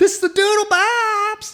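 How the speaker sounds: very high, very loud, shrill, thrilled cry. Retelling finding an old DVD in the shed: retelling own super excited exclamation. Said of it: "I was super excited".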